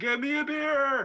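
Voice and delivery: very high, loud scream. Playing a character who orders a drink from across the room: screaming across the room. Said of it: "I screamed from across the room".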